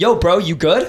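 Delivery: aggressive, confrontational, challenging tone. Retelling what a guy behind her said: imitating a confrontational guy. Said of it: "in a very, like, confrontational way".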